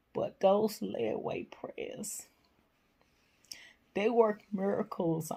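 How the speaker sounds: high, tearful, restrained voice. Thanking viewers who have been praying for them, trying not to cry. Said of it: "I'm trying not to cry".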